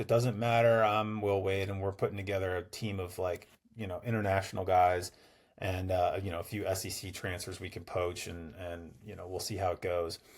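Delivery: quiet, offhand, boastful voice.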